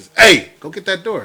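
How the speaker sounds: mean, bossy, very high and very loud. Contrasting a nice and a mean way of asking someone; mean way of asking. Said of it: "the meaner way".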